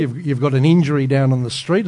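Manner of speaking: ordinary talk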